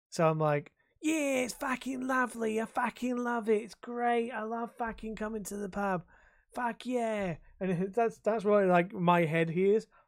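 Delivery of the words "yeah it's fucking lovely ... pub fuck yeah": put-on broad, heavy, thick Cockney accent, pitched up. Imitating a couple who come into the pub, in a thick Cockney accent. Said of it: "thick, like Cockney accent".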